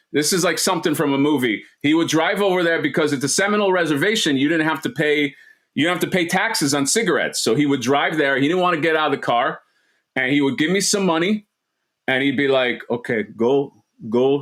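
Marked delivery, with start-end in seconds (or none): 12.9-14.4 put-on Arabic-accented speech.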